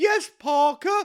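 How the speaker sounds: very high-pitched and projected. Retelling how the girlfriend pretends to be Lady Penelope: Lady Penelope voice. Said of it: "she pretends to be Missus Penelope from Thunderbirds".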